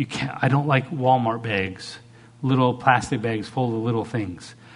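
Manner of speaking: ordinary talk, nothing marked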